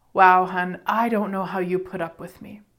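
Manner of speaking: totally vulnerable, sincere voice. Retelling what the speaker said to him after turning around, retelling a totally vulnerable remark. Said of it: "It was total vulnerability".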